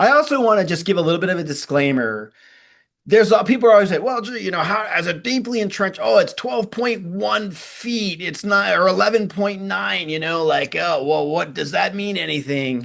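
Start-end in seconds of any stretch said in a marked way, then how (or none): 4.0-12.9 put-on curmudgeonly voice, grumpy and grumbling. Imitating people who complain about measurement precision: imitating a grumpy curmudgeon. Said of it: "my grumpy curmudgeon voice".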